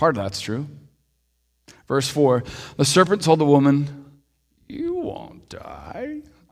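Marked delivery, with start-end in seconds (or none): 4.7-6.2 quiet, hushed, soft put-on character voice. Reading the Genesis story aloud, voicing the serpent speaking to the woman: the serpent's voice. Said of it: "I'm still trying out that voice".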